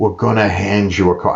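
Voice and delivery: put-on Staten Island accent. Retelling what an official said before an event: imitating a Staten Island accent. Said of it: "I have to do it with the accent".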